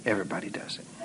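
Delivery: low, soft, sly tempting whisper.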